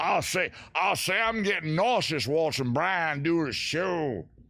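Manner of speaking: high, big drawl like a cartoon rooster. Host talking to viewers about his shaky camera, in a Foghorn Leghorn voice. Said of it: "Foghorn leghorn. ... One of my three impressions".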